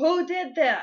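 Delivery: put-on high, furious, angry yell. Retelling a man yelling at the kids over a broken guitar: retelling a man yelling. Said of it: "and he's yelling at the kids".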